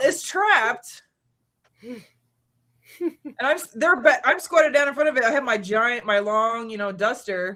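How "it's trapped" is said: high-pitched, shouted-out yell. Retelling what she shouted at the others: imitating her own yell. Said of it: "I yelled".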